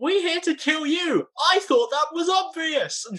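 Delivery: high-pitched, half-shouted holler. In a game scene, a character answers another character, yelling as loud as possible. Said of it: "I yell as loud as I can".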